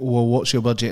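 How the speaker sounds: ordinary delivery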